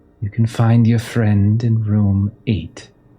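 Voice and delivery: detached, chilly, cold, distant voice. Voicing a seated villain telling the players where their friend is: cold, distant voice. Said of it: "in this sort of cold, distant voice".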